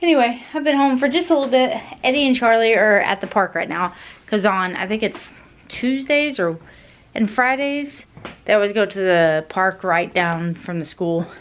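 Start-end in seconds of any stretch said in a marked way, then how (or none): 0.0-3.9 panting, breathless, slightly raised pitch. Having just come up the stairs, the speaker keeps talking, out of breath. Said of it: "I'm out of breath".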